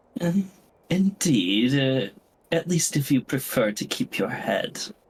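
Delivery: sugary, pleasant, sweet, honeyed tone. Voicing a woman threatening her servant: sweet tone. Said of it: "she sweetly responds".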